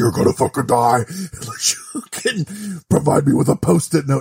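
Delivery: put-on, otherworldly sci-fi alien invader voice. Imagining aliens arriving and demanding a post-it note, alien voice. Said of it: "This is my alien voice".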